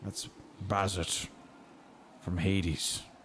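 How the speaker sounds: slow, hushed whisper, kept quiet. Leaning over to another character to point someone out: hushed tone. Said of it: "just in a hushed tone".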